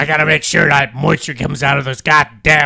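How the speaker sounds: very loud, bellowing farmer voice, belted out. Retelling what a man said, in his Redd Foxx voice. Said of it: "He goes".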